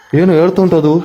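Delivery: high, loud, alarmed calling out.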